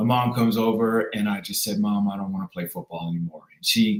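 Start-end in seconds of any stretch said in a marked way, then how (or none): 1.8-3.4 tearful, weepy, crying through tears. Retelling asking mom to quit football after being hurt: imitating own past crying. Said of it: "I'm crying".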